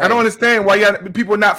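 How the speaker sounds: shouting. Plugging the podcast and asking why listeners aren't following: yelling. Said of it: "Why you gotta yell at us like that?".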